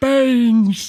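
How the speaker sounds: put-on frail old man voice. Retelling a video, acting an old man near death ordering food: imitating a frail old man. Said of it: "almost on death's door".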